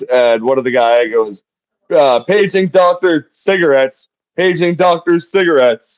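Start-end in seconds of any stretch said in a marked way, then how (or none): 2.2-5.7 put-on loud shouted call. Retelling a line a movie character yells outside: imitating someone yelling. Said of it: "yelling it".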